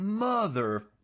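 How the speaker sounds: high, stretched long and slow. Showing how a censored movie swear word can be said: drawn out. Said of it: "you could really draw it out".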